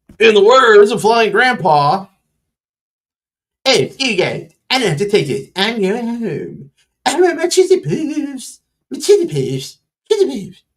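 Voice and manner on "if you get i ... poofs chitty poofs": animated, high, swooping cartoon kid voice. The speaker quotes Flying Grandpa's words as a South Park impersonation. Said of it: "there's your South Park impersonation".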